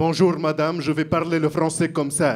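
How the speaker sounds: put-on Arabic accent, laid on thick. Retelling greeting a teacher at school: retelling own thick Arabic-accented French. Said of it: "her thick, thick, thick Arabic French".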